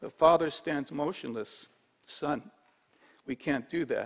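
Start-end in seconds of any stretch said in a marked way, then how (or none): 2.0-4.1 softly spoken, gentle, hushed and low-key. A father answers his son's request about the grain, said softly. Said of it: "he said softly".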